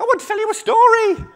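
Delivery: very high, very loud small animal squeak. Telling a story, the speaker voices the frog in a small animal voice. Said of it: "all my small animals have got the same voice".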